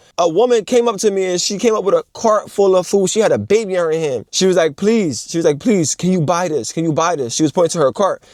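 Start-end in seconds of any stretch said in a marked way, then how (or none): 5.6-7.4 put-on tearful crying voice. Retelling how a woman in a store begged for help: imitating a crying plea. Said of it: "this lady was in front of me crying".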